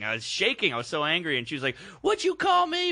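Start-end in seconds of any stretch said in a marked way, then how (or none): 2.0-2.9 put-on very high-pitched British accent. Retelling a lady's reply during an argument, British accent. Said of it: "But in a British accent".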